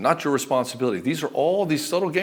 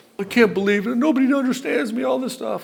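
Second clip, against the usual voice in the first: very high, wounded, weepy, tearful self-pity, acted out; 9 semitones higher than usual. Imitating a wife who cries and plays the victim: imitating someone crying as the victim. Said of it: "Then she'll play the victim".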